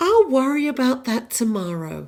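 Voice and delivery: bad, openly awful, put-on American accent. Quoting a favorite film line as Scarlett O'Hara, in a terrible American accent. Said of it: "That's my terrible American accent".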